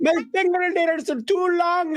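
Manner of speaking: put-on very high-pitched, slow Irish accent. Speaker imitating long-fingernailed people from the Guinness Book, accidental Irish accent. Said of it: "Why did I sound like Irish there?".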